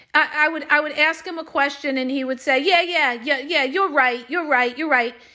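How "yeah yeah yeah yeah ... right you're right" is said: put-on sarcastic voice. Retelling how the ex-husband answered her questions: imitating a sarcastic reply. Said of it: "he was constantly sarcastic".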